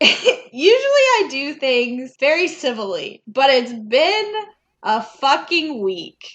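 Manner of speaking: slow, loud, drawn-out, weary voice impression.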